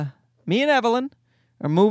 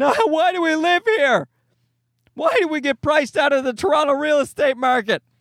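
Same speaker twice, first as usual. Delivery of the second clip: put-on screaming child voice; 5 semitones higher than usual. A mother acts out her son screaming at night, imitating a screaming child. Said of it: "he's screaming".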